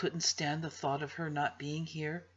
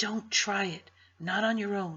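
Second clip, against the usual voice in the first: plain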